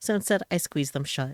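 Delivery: plain reading voice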